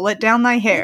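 ordinary talk

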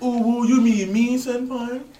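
put-on, high, cutesy Japanese anime girl voice. Retelling what a Japanese guy said, in a cute little Japanese girl voice. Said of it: "doing the cute little Japanese girl voice".

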